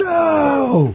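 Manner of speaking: high, loud scream.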